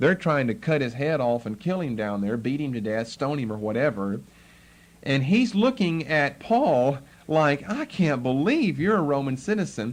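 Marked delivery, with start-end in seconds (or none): 7.7-9.9 mocking, incredulous, sarcastic tone. Acting out a man's reaction to Paul being a Roman citizen: acting out sarcastic disbelief. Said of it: "And it's with sarcasm".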